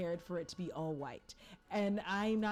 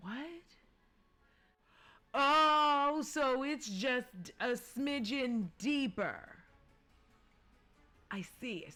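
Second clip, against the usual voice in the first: very slow, drawn-out shout with long stretched "oh"; 4 semitones higher, 3 dB louder than usual. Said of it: "Sorry, I'm shouting at you".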